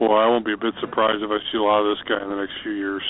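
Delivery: ordinary delivery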